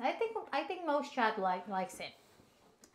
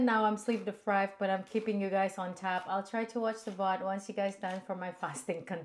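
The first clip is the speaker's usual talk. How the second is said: plain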